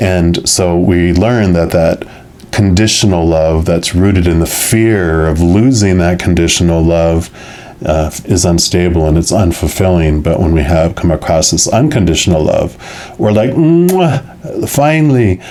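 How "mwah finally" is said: high, exaggerated, poorly done Italian accent. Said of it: "my very poor, uh, Italian imitation".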